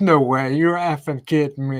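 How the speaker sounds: usual speaking voice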